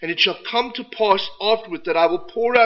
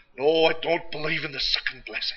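put-on thick Scottish accent of an old man; 4 semitones lower, 4 dB quieter than usual. Retelling Douglas MacMillan's reply about the second blessing, thick Scottish accent. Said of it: "with his thick Scottish accent".

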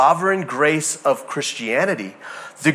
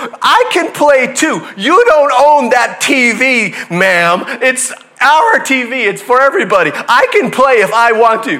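mock child's yelling, higher and louder; 10 semitones higher, 9 dB louder than usual. Retelling an argument over a TV, imitating a kid yelling at a lady. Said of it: "these two people are yelling at each other".

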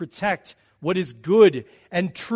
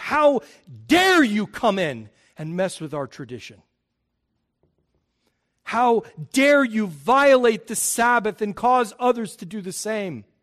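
angry, outraged, affronted, indignant outburst; 3 semitones higher than usual. A speaker voices opponents objecting to a teacher, acting out an angry outburst. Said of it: "they're angry because".

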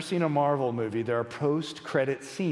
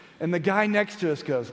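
plain

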